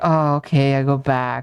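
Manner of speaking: mock very slow, drawn out, annoyed and put out. Retelling a player's reply after being told off: imitating someone sounding annoyed. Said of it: "She sounded very annoyed".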